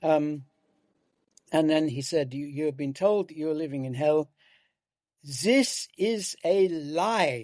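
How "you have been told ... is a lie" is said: put-on thick, heavy Austrian accent, word drawn out. Retelling a man's talk on environmentalism and politics, in a heavy austrian accent. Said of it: "in this heavy Austrian accent".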